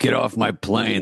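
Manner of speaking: put-on gruff movie-star voice. Listing famous lines he says in films: Harrison Ford impression. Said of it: "He goes".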